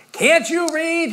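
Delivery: very loud, high-pitched, booming holler. Retelling a visit, a man at a second-story window calls down: Brother Ricardo's booming voice. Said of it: "came this booming voice".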